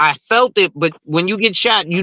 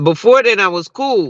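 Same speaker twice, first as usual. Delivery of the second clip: usual speaking voice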